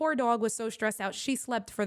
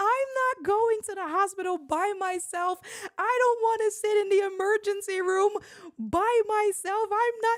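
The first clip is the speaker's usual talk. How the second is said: acted, very high, loud, sobbing tearful wail; 11 semitones higher, 5 dB louder than usual. Retelling refusing to go to hospital alone, imitating own crying. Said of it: "I start crying even more".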